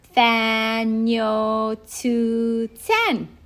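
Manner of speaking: very slow, careful, drawn-out delivery. Showing friends how to say a hard word: said slower. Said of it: "so I'll say it slower".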